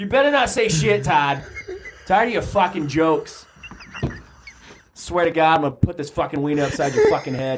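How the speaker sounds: mock mobster voice, pitched way up. A character at the ballpark rants at Todd, in a mixed New York Mafia accent. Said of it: "I think it's kind of like mixing right now".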